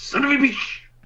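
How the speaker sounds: tiny, very high muttered grumble under the breath. Playing a spider who spots someone, muttering under breath. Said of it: "I mutter under my breath".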